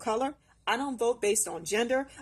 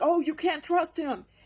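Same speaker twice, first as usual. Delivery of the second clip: put-on high-pitched, upset, emotional screaming outburst; 5 semitones higher than usual. Retelling a talk about Social Security, imitating the woman who started screaming. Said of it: "started screaming like".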